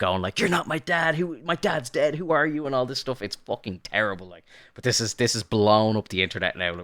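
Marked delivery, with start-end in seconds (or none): 0.4-2.6 put-on, very high-pitched, confrontational screaming outburst. Retelling a deleted movie scene where Andrew confronts his dad: imitating someone screaming. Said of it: "he's screaming at him".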